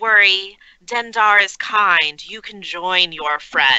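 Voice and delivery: threatening whisper. Playing a character who speaks to an attacking enemy: whispering in character.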